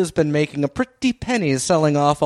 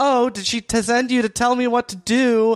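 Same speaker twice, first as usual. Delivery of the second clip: mock, really loud, pitched-up outburst; 8 semitones higher than usual. Retelling a show scene where Vicky answers Flora: imitating Vicky speaking loudly. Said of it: "real loud".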